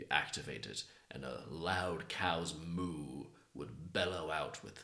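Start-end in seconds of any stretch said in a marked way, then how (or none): none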